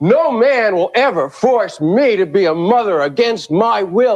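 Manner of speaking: slow, very aggressive declaration. Retelling a rally speaker addressing the crowd: imitating an aggressive tone. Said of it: "addressed the crowd in a very aggressive tone of voice".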